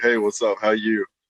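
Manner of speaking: put-on country-sounding Southern accent. Retelling own greeting, imitating own country-sounding greeting. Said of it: "I sounded really country saying that".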